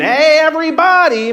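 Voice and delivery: very high, puppet-style bear character voice. Retelling how Fozzie Bear gets everyone's attention in a crowded house, in Fozzie Bear voice. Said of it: "my best Fozzie Bear voice".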